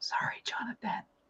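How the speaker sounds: very quiet whispered aside. Making a whispered aside behind a hand: whispering. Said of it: "let me whisper this behind my hand".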